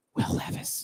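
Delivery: joking whisper. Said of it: "I have to whisper that one".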